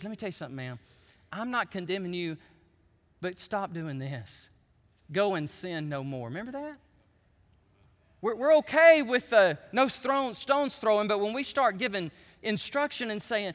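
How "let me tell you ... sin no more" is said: very quiet, hushed, private half-whisper. Retelling Jesus speaking to the woman caught in adultery: imitating Jesus half-whispering. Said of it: "Jesus whispers to her and he says".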